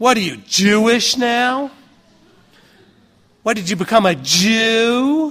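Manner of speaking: acted, slow, loaded insinuating inflection, one word drawn out. Speaker to a laughing audience, mimicking what people say: mimicking people's inflection. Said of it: "with the inflection in the voice when they said".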